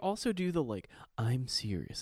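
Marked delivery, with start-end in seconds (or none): 1.2-2.0 cinema trailer narrator movie announcer voice. Mocking how some international english speakers talk, movie announcer voice. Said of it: "it's like movie announcer voice".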